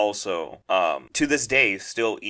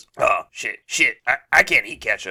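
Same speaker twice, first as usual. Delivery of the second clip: put-on, imitated old man voice; 3 semitones higher, 4 dB louder than usual. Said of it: "Let me do my impersonation".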